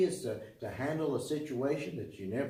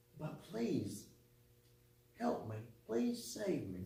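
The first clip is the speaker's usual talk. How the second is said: put-on tearful crying, quieter; 7 dB quieter than usual. Retelling how Peter begged to be saved: imitating Peter crying out. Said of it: "Peter starts crying and saying".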